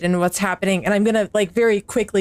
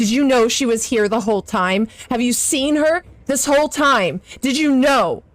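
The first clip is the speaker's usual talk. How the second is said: very accusatory, pitched-up, demanding tone; 5 semitones higher than usual. Confronting the doctor while towering over him: accusatory tone. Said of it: "in a very ac-, accusatory tone".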